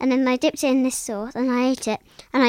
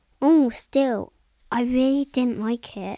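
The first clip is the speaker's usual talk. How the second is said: put-on insincere, sarcastic fake tone. Acting out someone hiding their real opinion of food: imitating a sarcastic, fake tone. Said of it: "being sarcastic and fake".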